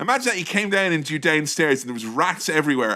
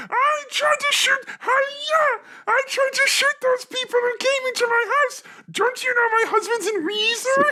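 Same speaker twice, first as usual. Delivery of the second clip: very high-pitched put-on character voice. Retelling a made-up dash cam story: Miss Piggy voice. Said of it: "And she was like".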